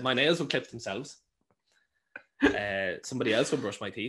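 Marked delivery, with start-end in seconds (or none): none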